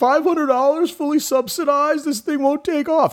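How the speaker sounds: very high, mocking, dismissive scoff. Retelling a mocking remark about the iPhone: Steve Ballmer impersonation. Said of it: "That's my impersonation".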